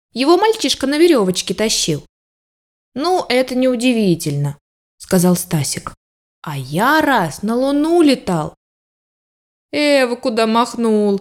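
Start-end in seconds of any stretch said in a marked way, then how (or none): 9.7-11.2 laughing, slower. A narrator reads a character's reply to a friend's boast, laughing. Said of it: "Засмеялся Мишутка".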